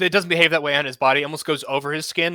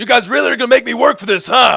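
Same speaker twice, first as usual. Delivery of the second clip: very loud, high, booming bellow; 8 semitones higher, 9 dB louder than usual. Game master voicing a foe in the hallway yelling at the players, bellowing. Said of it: "he just bellows out".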